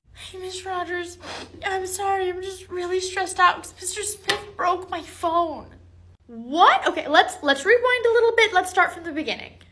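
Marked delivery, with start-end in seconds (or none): 0.2-5.7 choked-up, tearful speech through crying. Explaining to a teacher who asks if they are crying: crying while talking. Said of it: "Connor, are you crying?".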